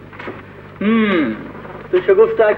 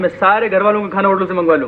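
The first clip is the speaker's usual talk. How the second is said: ordinary delivery, nothing marked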